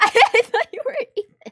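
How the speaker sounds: fast, laughing delivery.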